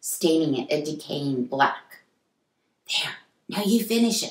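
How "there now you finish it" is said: hushed, soft, high-pitched half-whisper. Narrator reads a woman handing over the paintbrush to a man, half-whispered. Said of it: "she whispered".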